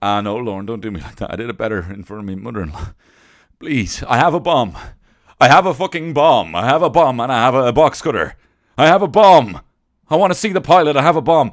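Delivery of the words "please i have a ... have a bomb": very loud, high-pitched yelling. Doing a quick bit on the show, as a 9/11 terrorist impression. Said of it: "that was my last impression of a 9/11 terror".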